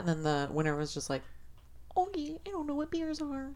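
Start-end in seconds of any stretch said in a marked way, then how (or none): 2.0-3.5 tiny, very high, squeaky mouse voice. Retelling a beer contest, quoting the winner's answer in a mouse-like voice. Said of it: "he sounded like a mouse".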